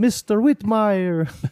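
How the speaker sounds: put-on Italian accent spoken at very high pitch. Introducing a character to the group, in Mister Whitmire's high-pitched Italian voice. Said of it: "I'll do the yeah high pitch like Italian".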